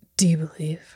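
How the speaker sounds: gently understated, softened, hushed, almost murmured. Retelling a movie scene where a character asks something quietly: imitating a quiet line. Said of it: "he says it really quiet".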